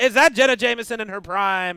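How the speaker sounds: play-by-play commentator voice. Pretending to commentate porn from the corner: play-by-play commentator voice. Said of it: "just being in the corner going".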